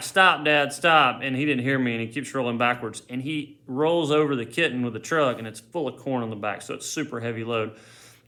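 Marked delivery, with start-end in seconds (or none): 0.0-1.2 loud, raised yell, shouting out. Retelling how they shouted to their dad backing up the truck: retelling a yell. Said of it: "I'm yelling like".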